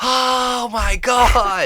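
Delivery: shrill, very high, very loud screaming. Retelling how the kids reacted on seeing a crawl to the door: imitating kids screaming. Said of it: "they were screaming".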